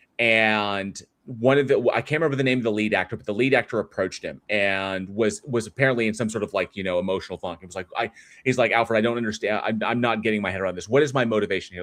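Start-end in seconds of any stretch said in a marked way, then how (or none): 8.8-11.9 put-on panicked voice. Retelling a film-set story, the speaker plays the lead actor asking Alfred, imitating a panicking actor. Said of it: "he was really starting to panic".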